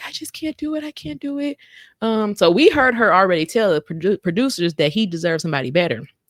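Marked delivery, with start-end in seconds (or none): 0.1-1.6 high, mock tearful sobbing voice. Retelling a reality show scene where a woman meets him, imitating someone crying. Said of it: "she crying".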